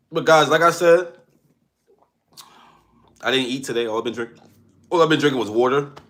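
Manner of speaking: talking with hiccups throughout. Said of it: "And the hiccups are showing".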